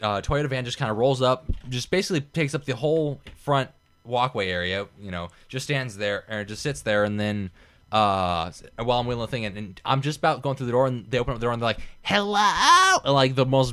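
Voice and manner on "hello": put-on annoying condescending yell, higher. Retelling a customer calling out from a van: imitating an annoying condescending yell. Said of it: "annoying, condescending voice yelling at me".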